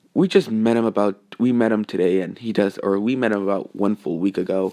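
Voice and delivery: plain reading voice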